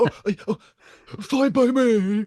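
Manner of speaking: very high, drawn-out sitcom voice. Showing that two impressions sound alike: Ross from Friends impression. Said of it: "when he goes like".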